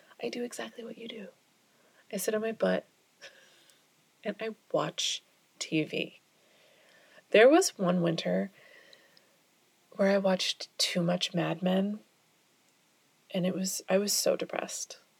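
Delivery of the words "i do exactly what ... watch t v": soft, hushed, deadpan whisper. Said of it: "And I'm like".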